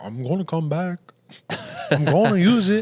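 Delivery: bad vague put-on foreign accent, high, slow drawl. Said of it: "What accent is that?".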